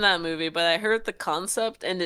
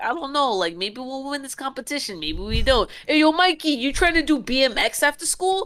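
put-on everyday New York–New Jersey kid accent, raised pitch; 7 semitones higher than usual. Describing a kid at the richer school, in a New York, New Jersey accent. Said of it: "typical like middle line, like New York, New Jersey accent, where he's like".

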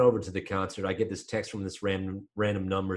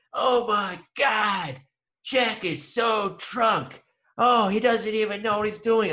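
play-acted, very high, shrill, dragged-out hollering; 13 semitones higher than usual. Retelling how a little girl started yelling at the speaker, imitating her yelling. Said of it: "starts yelling at me".

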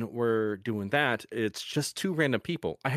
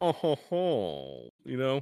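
haughty, snobbish put-on voice with swooping pitch; 2 semitones higher than usual. Speaker demonstrates the one character voice they do easily, snobbish voice. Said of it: "this really snobbish voice".

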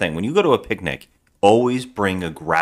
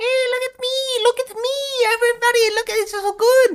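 very high, deliberately irritating, grating voice. Describing a clownfish paddle boat ad, speaker imitates its annoying overdubbed voice. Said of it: "Because it's way more annoying".

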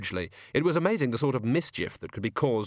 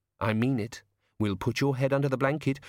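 usual speaking voice

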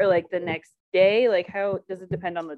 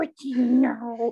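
very slow delivery, the word know drawn out; 4 semitones higher than usual. Imitating how Eliza Schlesinger talks for her dog in posts: imitating Eliza Schlesinger's voice. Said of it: "In that voice where she's like".

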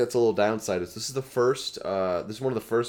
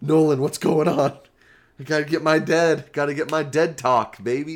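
put-on fatherly voice, higher and louder; 5 semitones higher, 5 dB louder than usual. Imitating the other speaker's dad, who loves The Walking Dead. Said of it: "He goes".

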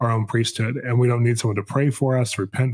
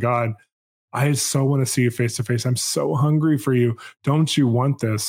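play-acted earnest, begging, pleading cry. Retelling a prayer to God from years ago: retelling own past crying out. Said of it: "crying out to him saying".

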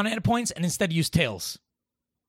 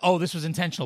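normal talking voice

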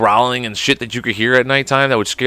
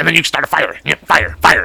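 put-on cartoon teen voice, higher; 3 semitones higher than usual. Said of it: "I've been working on my, my, uh, Beavis".

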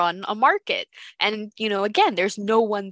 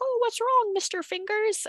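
very high, squeaky, tiny put-on puppet voice; 14 semitones higher, 4 dB quieter than usual. Describing a game character who puppets dead bodies, doing his little put-on voice. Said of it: "puts on a little voice".

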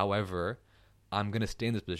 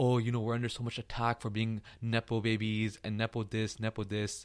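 patronizing, tongue-in-cheek, jokey, condescending tone; 3 semitones higher than usual. Retelling what Karan Johar said on the show: imitating Karan Johar's condescending tone. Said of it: "he said it in a very condescending way".

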